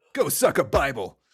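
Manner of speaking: acted vicious cartoonish voice. Recapping a scene, speaker quotes Homer's reply to Flanders, retelling it with vitriol. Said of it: "He says it with such vitriol too".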